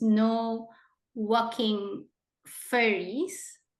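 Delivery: slow, careful delivery of a spoonerism.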